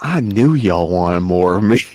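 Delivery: slow-burn, seductive, come-hither delivery. Retelling what Bora said after the fight, mock-seductive Bora voice.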